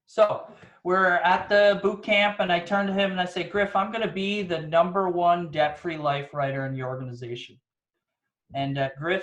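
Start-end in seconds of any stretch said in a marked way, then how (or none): none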